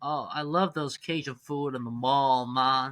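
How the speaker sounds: poor attempt at Louisiana accent. Joking about a Cajun restaurant at the mall: bad put-on Cajun accent. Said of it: "that's not even the right accent".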